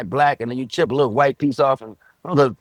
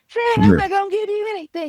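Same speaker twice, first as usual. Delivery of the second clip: put-on cartoon woman voice, higher pitch. Retelling doing the puppet show voices behind the curtain: Wilma voice. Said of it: "Wilma said".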